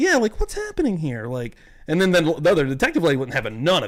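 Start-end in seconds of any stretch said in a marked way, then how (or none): 0.4-1.3 small, high, mousy little voice. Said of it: "The mousy voice?".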